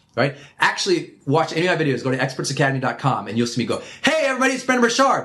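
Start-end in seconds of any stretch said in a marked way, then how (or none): 4.0-5.2 very high, loud, projected near-shout. Showing how he greets viewers in his videos, loud projected voice. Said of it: "It's almost the level it sounds like I'm screaming".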